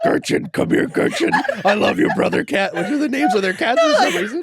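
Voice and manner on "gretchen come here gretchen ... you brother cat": dark monster voice. Describing how Adelaide talks to her cats, Venom voice. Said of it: "she talks to them in her Venom voice".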